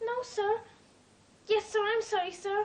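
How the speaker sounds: sounding like after crying. A servant found behind a curtain answers the master's questions, tearful. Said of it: "you've been crying".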